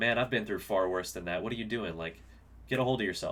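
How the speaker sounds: ordinary delivery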